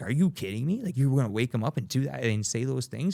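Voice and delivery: furious, disbelieving angry outburst, completely losing it. Retelling how a woman reacted at the hospital, acting out someone losing it. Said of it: "And Bianca starts losing it".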